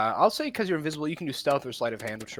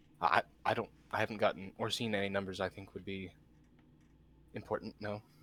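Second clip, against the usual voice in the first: acted whisper, quieter and lower; 4 semitones lower, 8 dB quieter than usual. Voicing Teal, answering another player's question, Teal whispering. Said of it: "Teal just whispers".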